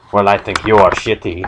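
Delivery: plain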